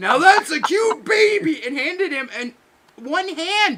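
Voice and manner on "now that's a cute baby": put-on huge man's voice, higher and louder. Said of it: "same voice".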